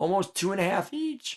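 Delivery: voice breaks way up, very high. Adding up an opponent's player coin values, voice crack. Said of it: "Voice crack there".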